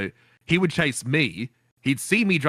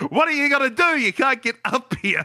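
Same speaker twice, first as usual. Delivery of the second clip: play-acted, very high, shrill shouted yell; 9 semitones higher, 3 dB louder than usual. Retelling taunting a chaser from up a hill on a bicycle: retelling a yell. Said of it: "And I just yelled at him".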